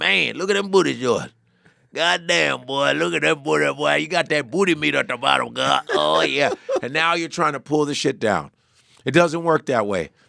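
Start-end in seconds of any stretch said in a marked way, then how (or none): 0.0-6.5 put-on rough, creaky, toothless creepy catcall voice. Speaker acts out a toothless man behind a dumpster, imitating a toothless catcaller. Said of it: "garbage dumpster with no teeth, going".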